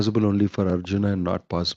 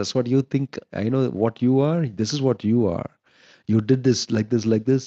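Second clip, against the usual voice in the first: mock passionate, heated tone; 3 semitones higher than usual. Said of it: "work themselves up into passion".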